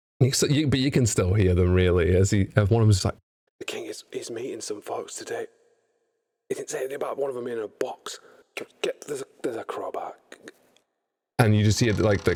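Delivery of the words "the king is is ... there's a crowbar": whispered, very quiet. Voicing guards outside a crate who talk among themselves: whispering guard voices. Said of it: "the voices drop to a whisper".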